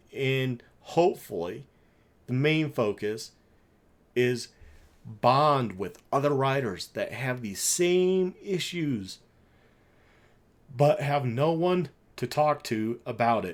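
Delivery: slow voice, changing as emotion creeps in. Describing a free riding event for riders with shared issues, getting emotional, voice changing. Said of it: "pitch of my voice changed".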